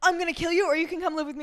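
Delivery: fuming, furious, angry delivery. Retelling a book scene where a character was so angry: imitating an angry man. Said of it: "he was so angry and he's like".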